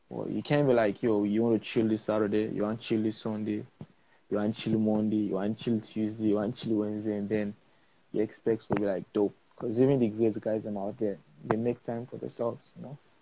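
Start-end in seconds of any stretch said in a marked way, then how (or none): none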